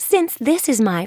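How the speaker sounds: ordinary delivery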